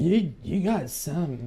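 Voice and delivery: tipsy slurred voice. Voicing a Vedalken who had too much to drink: drunk voice. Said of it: "I like this voice".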